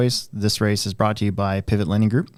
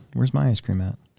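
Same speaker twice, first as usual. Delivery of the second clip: mildly put-out, a little grumpy tone; 3 semitones higher than usual. Joking about missing out on ice cream: mock grumpy. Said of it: "I'm gonna be a little grumpy".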